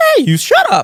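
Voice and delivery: very high, squeaky voice. Retelling a man almost fighting in the stands, imitating his squeaky voice. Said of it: "his voice squeaks in in like strange patterns".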